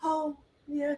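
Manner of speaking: hushed, sleepy, low-energy, very soft and chill. Imitating the guest's reply to the host's greeting: imitating Fallon's chill, low-energy reply. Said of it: "'Cause she's just very chill".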